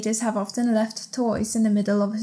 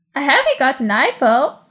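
put-on woman's voice, raised; 4 semitones higher, 8 dB louder than usual. Redoing the woman's line after being asked for the impression again. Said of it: "Can you do your impression again, please?".

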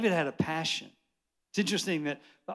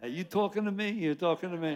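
New Yorker accent; 2 semitones higher than usual. Joking to a church crowd about how New Yorkers talk, New York accent. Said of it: "And with New York".

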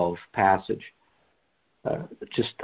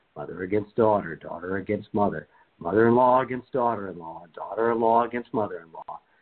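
ordinary talk

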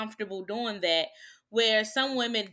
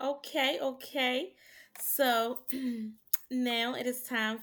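put-on soft, girly voice; 3 semitones higher, 4 dB quieter than usual. Introducing the next segment, the speaker uses a soft girl voice. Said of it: "is that your soft girl voice?".

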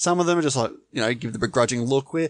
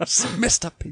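put-on smooth, sultry voice, pitched up; 7 semitones higher than usual. Announcing a joke show called Smooth Sounds: mock smooth sultry voice. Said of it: "Tune in next week for Smooth Sounds".

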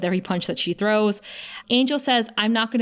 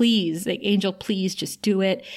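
put-on tearful, sobbing tone; 2 semitones lower than usual. Retelling a scene, the speaker acts out a woman begging another character: retelling a sobbing plea. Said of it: "And then she starts saying".

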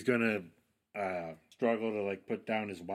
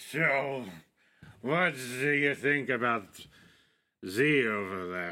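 put-on loud, halting drunken voice, breaking off mid-phrase; 4 semitones higher, 5 dB louder than usual. Acting out a character who waltzes over to ask someone something, in a drunken voice. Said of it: "with a drunken voice".

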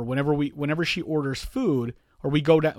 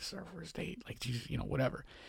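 very quiet, hushed whisper; 14 dB quieter than usual. Retelling an aside on a date while the wife reads the menu, whispering. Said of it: "I'm like whispering like".

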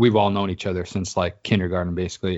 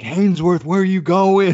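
play-acted, very high-pitched, loud jeering holler; 11 semitones higher, 6 dB louder than usual. Speaker retells yelling at their buddy with friends, retelling a yell. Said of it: "we're yelling like".

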